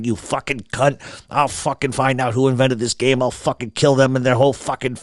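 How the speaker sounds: mock muttering under breath. Retelling how a player cursed at a racing video game, imitating someone muttering.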